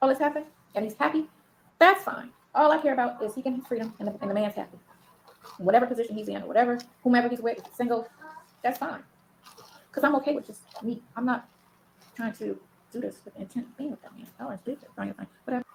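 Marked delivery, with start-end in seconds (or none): 11.2-15.6 muttered under breath, very low and quieter. Wrapping up a statement to the viewers: talking under her breath. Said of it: "She said it real low".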